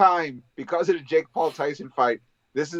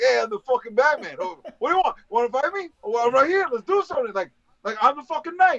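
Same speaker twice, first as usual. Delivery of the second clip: put-on New Jersey accent, higher pitch; 8 semitones higher than usual. Speaker pitching how Batman should talk in a sequel, doing Batman with a Jersey accent. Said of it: "he should have a Jersey accent".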